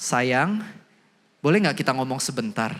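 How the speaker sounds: patient, tender, gentle, kindly tone. Example of speaking nicely to a partner despite being annoyed: gentle, soft tone. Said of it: "Tapi saya pelan-pelan".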